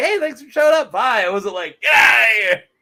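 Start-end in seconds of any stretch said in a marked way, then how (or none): 0.0-1.2 bright, friendly, cheerful, pitched-up voice. Retelling how she said bye to someone showing up, imitating a cheerful goodbye. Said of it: "I was saying bye like cheerfully".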